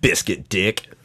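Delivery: put-on sarcasm, very low and quiet. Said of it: "makes me sound sarcastic when I'm being serious".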